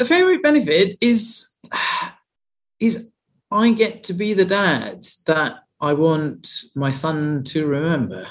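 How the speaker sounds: slow, heartfelt, a bit emotional. Asked for a favorite benefit after weight loss, a dad answers, getting a bit emotional. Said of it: "getting getting a bit emotional here".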